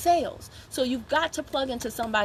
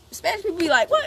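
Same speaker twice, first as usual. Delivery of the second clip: ordinary delivery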